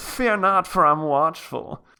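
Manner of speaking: high-pitched nerdy voice. Repeating the line again, this time as Clavicus Vile in a nerd voice. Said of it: "But in my nerd voice".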